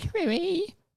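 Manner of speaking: trembly, very high, squeaky little elf voice. Showing how the name Crewy should be pronounced, quivering high-pitched little elf voice. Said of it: "Like a quivering, high-pitched little hobbit, or not hobbit, elf".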